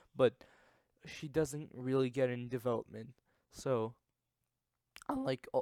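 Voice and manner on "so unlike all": terrible voice crack, jumping way up. Ranking a show character when the voice cracks badly. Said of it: "that was a terrible voice crack".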